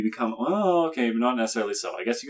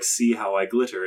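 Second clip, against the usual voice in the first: ordinary delivery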